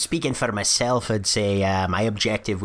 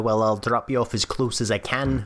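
normal talking voice

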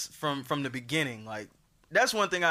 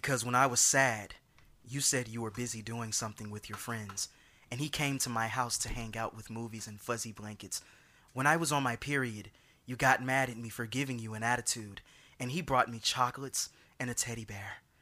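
dramatic delivery, lower and quieter; 4 semitones lower, 5 dB quieter than usual. Reading a breakup text message exchange aloud: dramatic reading. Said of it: "I feel like doing a dramatic reading".

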